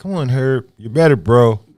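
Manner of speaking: put-on voice, very slow, loud, drawn out.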